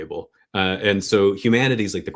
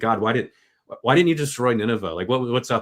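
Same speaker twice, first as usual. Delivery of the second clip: put-on angry tone, higher pitch; 4 semitones higher than usual. Retelling Jonah's complaint to God about Nineveh, imitating Jonah being mad. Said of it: "really mad at God".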